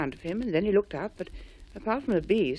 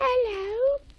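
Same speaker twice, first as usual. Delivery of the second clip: tiny, high, squeaked-out voice. Narrator reading a story, voicing a mouse answering the friends' shout: squeaky Millicent Mouse voice. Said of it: "said a squeaky voice".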